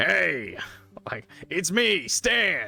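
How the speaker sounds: loud, very slow, drawn-out character voice. Showing how the character Stan might sound: Stan voice. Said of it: "the one Stan is like".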